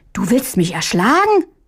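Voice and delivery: horrified, aghast, stunned disbelief. A young rooster's older brother raises a hand against him; he recoils, horrified. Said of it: "Fuhr Hähnchen entsetzt zurück".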